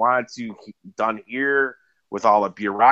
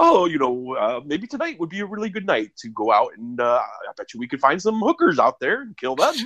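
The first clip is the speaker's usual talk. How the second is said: overly proper put-on voice, super proper and sing-song; 4 semitones higher than usual. Retelling how he talks the guy into it, in a super proper voice. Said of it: "he's got like this super proper voice".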